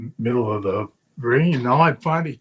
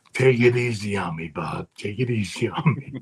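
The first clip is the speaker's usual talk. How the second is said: whispered speech; 3 semitones lower than usual. Retelling what an opponent said before a wrestling bout: imitating someone whispering. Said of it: "Rick whispers in my ear".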